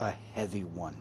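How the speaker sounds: very low, soft, quiet under-the-breath mutter. Voicing a character walking away to another cart: muttered under his breath. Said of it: "kind of under his breath as he walks away".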